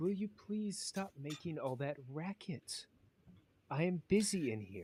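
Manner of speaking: light, dainty, youthful, high feminine voice. Voicing someone inside a room who calls out to the group: dainty, light youthful feminine voice. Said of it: "A very feminine, light, almost like a youthful voice just say".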